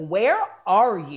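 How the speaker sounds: loud, angry, already annoyed voice. Retelling a mom's question on the phone: imitating an angry mom. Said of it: "already pissed".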